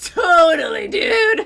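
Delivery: belted out, high and loud. Player echoes a friend's exclamation while they play, Luffy-like voice. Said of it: "You kind of sounded like Luffy for a second".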